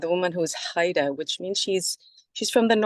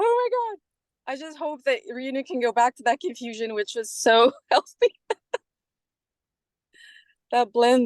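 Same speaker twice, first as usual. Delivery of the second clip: crying, tearful, pitched-up voice; 6 semitones higher than usual. Speaker responding to a guest's explanation, crying. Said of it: "sorry, I'm crying".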